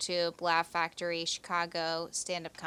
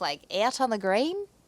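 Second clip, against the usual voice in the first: loud, high, bad fake Australian accent. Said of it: "I cannot do an Australian accent".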